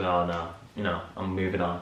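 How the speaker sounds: offhand, dismissive brush-off tone. Retelling how the character brushes off the news: imitating a dismissive brush-off. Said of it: "brushes it off and goes".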